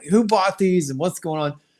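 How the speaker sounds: put-on yell, pitched high, not at full force. Retelling asking a seller who bought the figures: imitating own yelling. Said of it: "yelling out loud".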